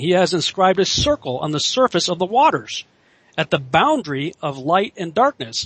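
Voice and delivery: normal talking voice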